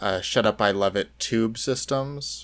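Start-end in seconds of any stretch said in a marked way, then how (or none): none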